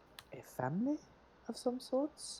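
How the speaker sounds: high-pitched, secretive, leaning-in whisper. Narrating a character who looks around and leans in close: whispering. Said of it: "leans in close, and just whispers".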